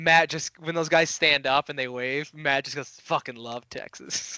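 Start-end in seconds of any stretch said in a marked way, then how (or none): 3.0-4.4 muttered under breath, quieter and slower. Retelling what Matt said as the two Texas Rangers waved, muttered under his breath. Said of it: "Like under his breath".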